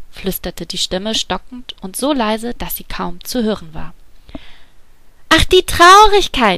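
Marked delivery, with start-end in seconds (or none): 5.3-6.6 very high, very loud, delighted glad cry. The little woman greets Sadness as if an old acquaintance, exclaiming with delight. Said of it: "rief die kleine Frau erfreut aus".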